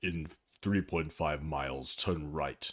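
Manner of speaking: dark, evil, menacing voice. Imitating the car's navigation voice giving directions, Zargon's dark evil voice. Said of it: "he had a very dark, evil voice like this".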